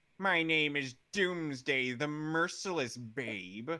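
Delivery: played as a cartoon villain character voice. Asked to put on the voice of his take on Doomsday: Scaramouche voice. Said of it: "I think it's easier if you just put on the voice".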